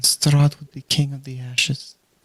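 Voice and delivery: quiet, soft voice. Voicing a character speaking as another goes to bed: quiet voice. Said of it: "You hear just a quiet voice".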